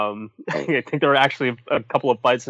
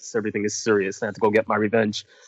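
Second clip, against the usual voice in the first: level, flat, dour deadpan monotone; 3 semitones lower than usual. Imitating how a character who turned edgelord talks, flat monotone. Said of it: "she talks monotone all the time, kind of like this".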